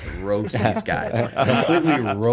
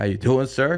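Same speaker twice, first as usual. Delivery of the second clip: thinned-out voice with less bass; 4 semitones higher than usual. Retelling answering a call back from the man: bass taken out of voice. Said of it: "I take some bass out of my voice".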